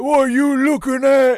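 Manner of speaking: exaggerated Cockney accent. Speaker imitates a character tagged gang member, over-the-top Cockney accent. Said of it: "there is over the top Cockney".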